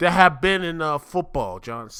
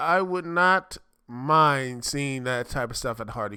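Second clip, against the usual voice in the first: "not" heavily stressed and held. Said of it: "Just, I would not mind seeing".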